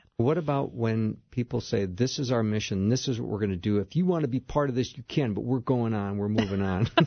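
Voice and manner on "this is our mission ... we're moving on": combative, belligerent, uncompromising, hard-line tone. Acting out what people say when pitching a mission, put-on belligerent tone. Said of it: "that was my best belligerent impression".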